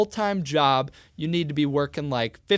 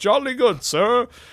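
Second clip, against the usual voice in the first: fake British accent, pitched up; 8 semitones higher, 5 dB louder than usual. Acting out employers answering a job applicant: put-on British accent. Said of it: "I don't know why I made them British".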